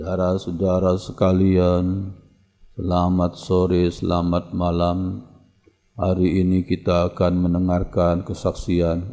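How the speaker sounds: flat, droning monotone with level intonation. Giving an example of a speech opening in flat monotone intonation. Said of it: "Itu kan intonasi datar".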